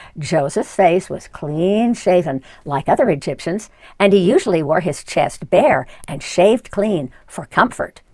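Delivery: ordinary delivery, nothing marked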